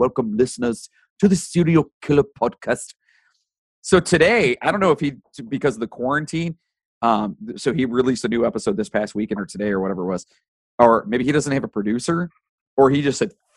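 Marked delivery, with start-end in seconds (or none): 0.0-2.9 heavy, laid-on, put-on Norwegian accent. Retelling a favorite podcast's opening line: imitating a Norwegian podcast host. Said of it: "he's very Norwegian when he speaks".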